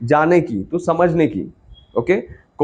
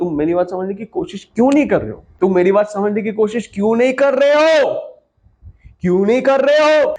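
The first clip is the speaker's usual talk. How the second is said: frustrated and exasperated, higher pitch; 5 semitones higher than usual. Teaching line delivery, the speaker demonstrates a line full of frustration. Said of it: "उसमें ज्यादा frustration आ गया".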